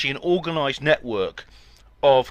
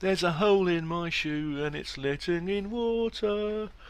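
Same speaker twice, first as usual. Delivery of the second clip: slow, drawn-out, droopy put-on voice, pitched up; 5 semitones higher, 7 dB quieter than usual. Replying to a comment that their Guardian voice sounds like Neil, in Neil voice. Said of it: "my Guardian voice sounds like Neil from The Young Ones. And I suppose it does, man".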